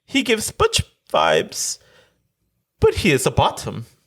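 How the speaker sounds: fake British accent with a swooping tune. Reading a listener's letter aloud: put-on british accent. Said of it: "I felt like I had to do that accent".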